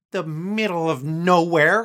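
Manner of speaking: very loud, high, full of disgust. Narrator reads a woman piping up before a man can answer, with disgust. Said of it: "she says with disgust".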